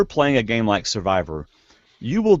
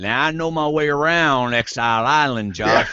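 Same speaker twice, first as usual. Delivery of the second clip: imitated Louisiana accent. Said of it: "Keith is so likable with his accent".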